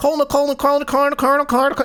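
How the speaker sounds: very fast, rapid-fire, rattled-off repetition of "colonel". Showing how a word sounds when repeated, very fast. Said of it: "try saying Colonel really fast".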